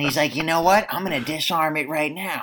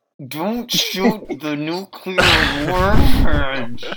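put-on speech through clenched, gritted teeth; 3 semitones higher, 5 dB louder than usual. Retelling what he said to Kelly, acting it out through gritted teeth. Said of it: "through his teeth".

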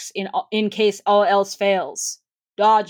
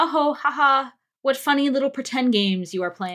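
condescending, put-on chuckling, fake laugh through the words; 4 semitones higher than usual. Mocking adults playing pretend like children: mock laughing while talking. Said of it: "laughing, like".

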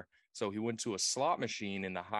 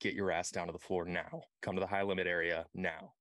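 normal talking voice

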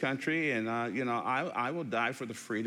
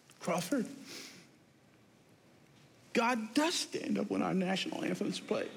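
put-on tearful, trembling, shaking voice; 8 semitones higher than usual. Retelling a woman's words after she came up to the speaker: imitating someone shaking with tears. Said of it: "she's shaking, actually, with tears in her eyes".

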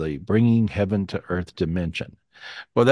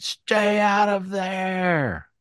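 very slow, high scream, stretched out; 11 semitones higher than usual. Retelling a vision in which a voice screamed a warning: imitating a scream. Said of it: "God's screaming".

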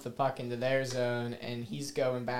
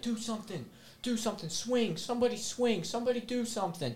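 mock very high, goading, taunting scream; 10 semitones higher than usual. Retelling someone baiting three players sitting there: imitating someone screaming. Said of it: "he's screaming at".

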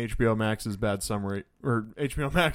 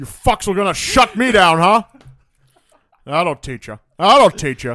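put-on complaining computer voice, higher and louder; 8 semitones higher, 13 dB louder than usual. Joking about recasting the film's computer Hal: Sean Connery voice as Hal. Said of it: "it's just Sean Connery bitching about the mission".

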